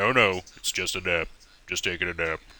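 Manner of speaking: slow, deliberate, drawn-out insisting protest. Retelling an argument about naps, imitating Tommy. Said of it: "let me do my best Tommy".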